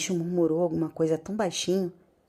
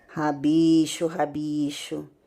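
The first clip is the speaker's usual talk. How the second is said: cold voice, said softly. Reading a bedtime story aloud, the master answering: cold voice, said softly. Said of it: "disse a voz fria suavemente".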